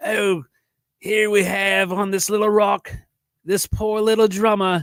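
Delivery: very high-pitched, badly done Australian accent. Describing a little lizard on a rock, attempting a bad Steve Irwin Australian accent. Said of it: "I can't do an Australian accent".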